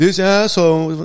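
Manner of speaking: imitated yelling at full volume. Retelling how a man pointed and shouted: imitating someone yelling at the top of his lungs. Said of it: "yelling at the top of his lungs".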